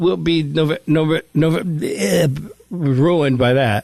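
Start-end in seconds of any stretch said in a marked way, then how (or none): 0.0-2.3 stuttered, repeated first syllable of "November". Announcing a show date at Zany's, slipping into a Porky Pig stutter. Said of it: "by my Porky Pig impression".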